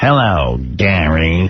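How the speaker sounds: low, sinister villain voice, savoring the words. Mocking a caller by imitating his voice: sinister Batman-villain voice. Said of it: "He does sound like a sinister, like, Batman villain".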